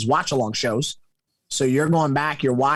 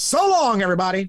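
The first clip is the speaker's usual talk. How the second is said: higher-pitched mock wrestling announcer voice; 11 semitones higher than usual. Recalling how announcers used to close out a show, you sign off to everyone in a put-on, imitating a wrestling announcer sign-off. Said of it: "back in the day, it was always".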